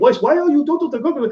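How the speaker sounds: high, put-on Spanish accent. Retelling how a fiancée spoke when she got mad: imitating a spanish accent. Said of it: "she had this Spanish accent".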